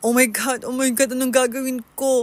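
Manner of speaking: put-on sobbing words in panic. Retelling the moment of seeing the scene while waiting for the ambulance: retelling panicked crying. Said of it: "I'm keep on crying and crying".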